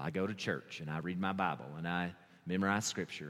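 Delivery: deep, very low, soft put-on solemn voice. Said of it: "I'm sorry I keep going to that voice".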